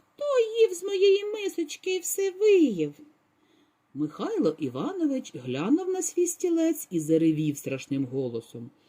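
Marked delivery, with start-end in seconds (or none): 0.2-2.9 very high, tiny, thin, squeaky little voice. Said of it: "запищав тоненьким голоском".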